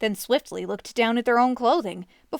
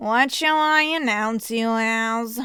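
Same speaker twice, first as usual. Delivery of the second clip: listless, uninterested, bored tone. A herald meets a wizard arriving at the great hall's doors, bored voice. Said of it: "the herald asked in a bored voice".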